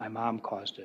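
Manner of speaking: barely audible, very quiet, low voice. Retelling what a child told a forensic interviewer: very quiet voice. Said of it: "in this really quiet tone".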